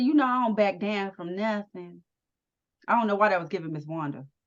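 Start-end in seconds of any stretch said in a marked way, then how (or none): none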